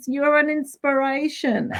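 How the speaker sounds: play-acted yelling that sounds called from afar. Retelling cheering on an older lady who passed on the walk: imitating yelling from a distance. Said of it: "I'm yelling from a distance".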